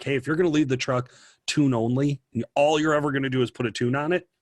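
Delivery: normal talking voice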